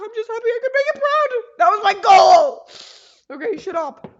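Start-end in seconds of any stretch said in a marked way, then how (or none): 0.0-2.7 very loud, high, choked-up tearful crying. Speaker brings up family and talks about making a parent proud, crying. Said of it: "now I'm crying because I brought up family".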